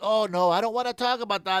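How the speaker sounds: put-on whiny, mock-whining voice. Retelling how the supervisor reacted during a talk, imitating a whiny voice. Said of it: "the guy is just whining".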